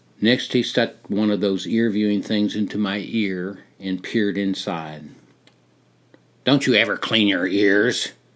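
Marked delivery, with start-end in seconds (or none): 6.5-8.1 gruff, rough-sounding voice. A doctor peering into the narrator's ear asks a question; gruff. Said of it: "he asked gruffly".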